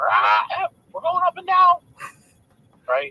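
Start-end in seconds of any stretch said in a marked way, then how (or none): 0.0-1.8 shrill, very high, loud parrot voice. Telling a joke about a pirate captain and his parrot, parrot voice. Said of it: "and the parrot's like".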